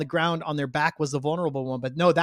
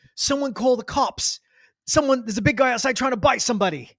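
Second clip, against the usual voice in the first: put-on British accent, pitched up, held throughout; 8 semitones higher than usual. Retelling what a man says about a fight outside, in a British accent. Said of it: "Perfect British accent".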